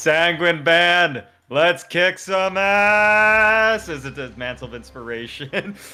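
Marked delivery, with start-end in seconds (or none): 0.0-3.9 booming, very loud, very slow rallying yell. In the game narration, the character rallies the Sanguine Band, voice booming out. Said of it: "his voice booms out".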